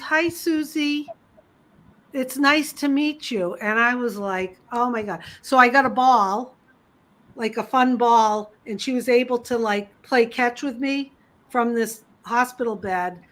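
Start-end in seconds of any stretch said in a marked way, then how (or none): 0.0-3.5 tiny, high-pitched little voice. Retelling what a girl in a hospital bed said on meeting her, small little voice. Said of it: "this little voice, she goes".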